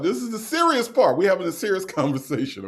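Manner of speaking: talking through laughter. Trying to continue a serious part while others laugh, laughing while talking. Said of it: "y'all got me laughing".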